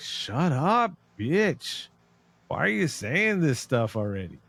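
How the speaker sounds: play-acted fed-up, irritated, annoyed, drawn-out tone. Retelling how a friend yelled at the screen: Deborah's voice, annoyed. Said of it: "That's Deborah's quote".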